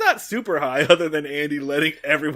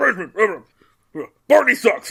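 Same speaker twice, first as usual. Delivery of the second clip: loud mumbling, muffled as if coughing; 6 semitones higher, 5 dB louder than usual. Imitating someone hiding words under his breath: imitating muttering under breath. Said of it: "hide something under his breath".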